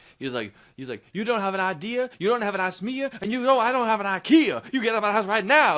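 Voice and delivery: preacher-style delivery. Retelling a man in a police video ordering someone out of his house, talking like a preacher. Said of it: "He's talking like a preacher".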